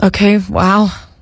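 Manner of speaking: heartfelt, emotional, disappointed, let-down tone. Asked to act disappointed and trying again, as a disappointed mom. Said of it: "That was a disappointed mom".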